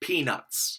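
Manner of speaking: slow, breathy, drawn-out whisper of peanuts. Saying a word a few times in case listeners don't know it: said slowly. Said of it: "let me say it slowly a few times".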